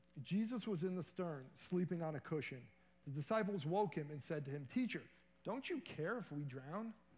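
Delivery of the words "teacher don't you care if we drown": lightly inflected delivery, not read flat. Speaker retelling the disciples waking Jesus during the storm, with a little voice inflection. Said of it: "Put a little voice inflection there".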